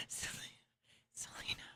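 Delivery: mimicked mutter under the breath. Imitating how someone said a name: imitating someone saying it under his breath. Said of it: "He says Selena under his breath".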